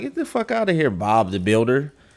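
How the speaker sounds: put-on girl's voice, curt and dismissive. Imagining how a girl answers a plain introduction: imitating a girl brushing a guy off. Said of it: "they gonna be like".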